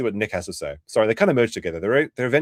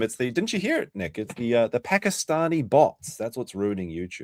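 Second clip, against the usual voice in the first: ordinary delivery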